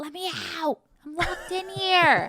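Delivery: full-on, high-pitched screaming. Retelling how a trapped burglar yelled at arriving police: imitating someone screaming. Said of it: "he is screaming".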